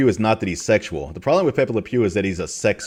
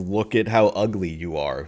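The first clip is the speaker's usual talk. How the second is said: plain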